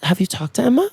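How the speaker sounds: put-on, very sweet, woman's voice. Retell the question Molly asked Jared, imitating Molly's sweetest voice. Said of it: "said this in the sweetest voice".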